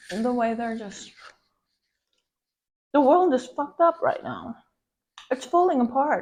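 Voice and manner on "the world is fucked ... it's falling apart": loud, high, angry shouted rant. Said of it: "Sorry, I'm just really angry right now".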